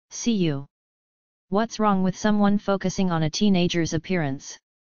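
ordinary delivery

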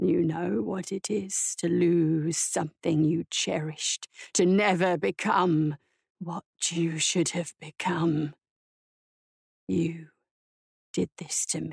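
low, guttural, scraping, unpracticed voice. Barbarous speaks through the bars to the woman: guttural, unpracticed voice. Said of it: "The voice behind her was guttural and unpracticed".

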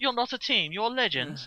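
put-on strong British accent. Retelling an actor's line to another speaker, strong British accent impression. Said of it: "I wasn't expecting such a strong British accent".

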